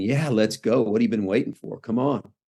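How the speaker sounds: ordinary delivery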